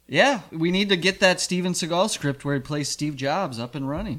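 normal talking voice

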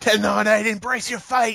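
mock, very high shrieking death metal pterodactyl scream. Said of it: "a death metal, like, pterodactyl scream?".

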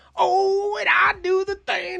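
put-on old cowboy accent. Retelling what the performer dressed like a cowboy said: Yosemite Sam accent. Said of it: "that old, like, Yosemite Sam accent".

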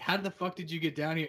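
ordinary talk

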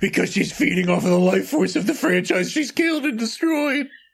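low, creepy, menacing clown voice. Joking with co-hosts, briefly slip into a Pennywise voice. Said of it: "You sounded very Pennywise there".

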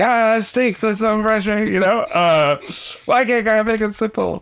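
voice pitched very high. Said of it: "That's my Josh impression".

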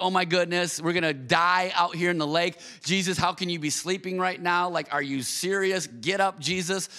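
ordinary delivery

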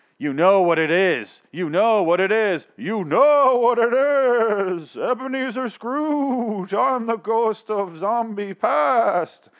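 high, slow, loud, drawn-out ghost yell. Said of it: "the ghost starts yelling at him like".

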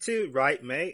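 put-on, fake English accent. Pretending to be Max just back from England: put-on English accent. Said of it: "I love your new accent".

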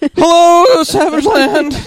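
very high, loud, yelping cartoon-teen voice. Acting out a co-host being woken up to record, speaking in a Morty voice. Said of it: "That was a pretty good Morty voice".

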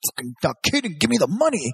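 acted aggressive, threatening man's voice. Retelling how a man demanded money from the speaker, imitating an aggressive tone. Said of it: "super aggressive with me".

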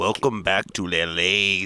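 poor fake gruff actor voice. Doing a really bad Danny Trejo impression: bad Danny Trejo impression. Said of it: "my really bad Trejo, uh, impersonation".

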